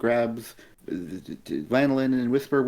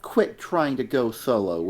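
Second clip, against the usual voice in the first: ordinary talk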